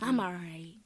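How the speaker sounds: sad, downcast, unconvincing tone. Acting out someone insisting they are fine: imitating a sad "I'm all right". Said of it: "Your tone already says you not".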